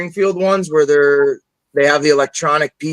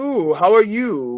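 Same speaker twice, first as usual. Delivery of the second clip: slow, theatrical, drawn-out stage-ham thespian voice; 4 semitones higher than usual. Taking up a challenge to do all the voices, Sideshow Mel thespian voice. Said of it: "Very like thespian".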